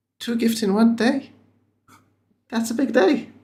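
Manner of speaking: excited delight, pitched very high. Voicing a character happy to receive a gift: excited but quiet. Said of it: "excitedly but quietly".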